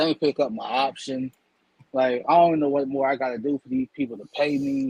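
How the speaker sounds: ordinary talk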